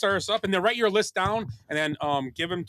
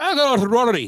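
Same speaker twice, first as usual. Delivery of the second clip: put-on Northern Irish accent, higher and louder; 7 semitones higher, 9 dB louder than usual. Picking a golfer for the tournament, in Rory's accent. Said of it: "Is that correct accent?".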